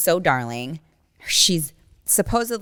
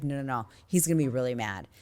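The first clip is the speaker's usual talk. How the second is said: put-on frightened pleading, lower pitch and quieter; 4 semitones lower, 8 dB quieter than usual. Retelling what a woman said at a meet and greet, imitating a scared woman. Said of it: "Why are you so scared?".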